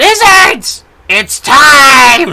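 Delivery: piercing, very loud, shrill scream, drawn out. Voicing Snapjaw calling the lizards to rebel: screaming. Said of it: "she screams out".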